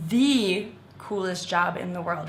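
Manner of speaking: the word the hit hard. Showing how to stress that something is very cool: strong stress on "the". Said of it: "Really emphasize the".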